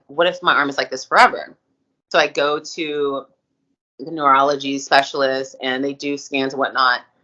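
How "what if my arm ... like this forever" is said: ordinary talk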